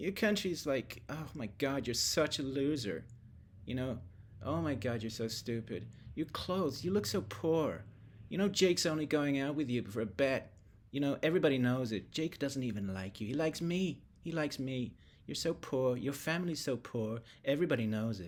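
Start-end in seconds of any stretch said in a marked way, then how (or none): 1.1-18.3 mocking, catty mean-girl taunting voice. Mocking a politician by acting out her reply as a mean girl: mean girl voice. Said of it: "she really turns into the mean girl".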